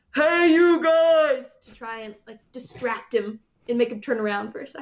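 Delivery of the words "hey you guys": big, gruff, loud manly voice. A player casts an illusory voice behind enemies to distract them, big gruff voice. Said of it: "like a big, gruff voice that says".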